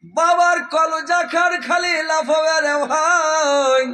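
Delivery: high, loud anguished shout.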